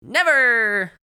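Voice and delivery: very high, very loud, shrill shouting. Narrator reads Candace answering Max's teasing, shouting. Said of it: "Candace shouted".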